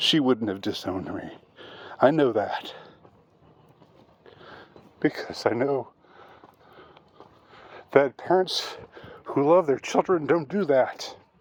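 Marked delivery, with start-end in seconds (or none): 2.0-11.1 choked up, emotion catching in the throat. Insisting a loving parent would never have disowned them, getting choked up. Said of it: "I'm sorry for getting choked up".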